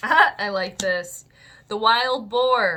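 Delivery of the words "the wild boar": loud, sudden yell. Reading out the animal message for Aries to the audience, yelling. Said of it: "I don't know why I'm yelling".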